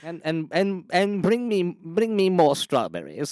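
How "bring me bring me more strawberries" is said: put-on posh British accent, higher. Imagining the king unveiling his portrait: King Charles posh British accent. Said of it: "his posh British accent".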